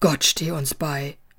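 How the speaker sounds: low, groaned-out voice. Reading Musa's reply after Nibur's story, groaning. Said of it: "stöhnte Musa".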